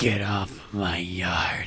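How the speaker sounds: deep, very slow, dragging, out of breath. Showing a friend how you sounded, quoting the film in a Clint Eastwood in Gran Torino voice. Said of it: "I sounded like um Clint Eastwood".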